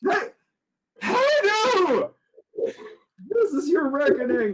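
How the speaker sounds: squeaky terrified voice. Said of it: "In a squeaky, terrified voice".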